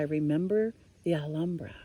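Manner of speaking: plain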